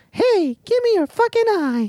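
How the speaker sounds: very high, squeaky voice. Imagining how Disney would say the line, in Mickey Mouse voice. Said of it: "Oh, no, Disney, like, Mickey Mouse would have a".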